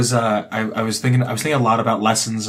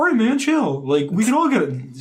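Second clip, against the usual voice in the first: put-on mocking undermining voice, higher pitch; 11 semitones higher than usual. Imitating the other speaker calming down a fight: mocking imitation of a friend. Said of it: "I shouldn't do that voice".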